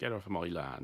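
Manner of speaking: put-on southwest English West Country accent. Demonstrating the hostile version of the saying, English West Country accent. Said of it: "an English West Country accent".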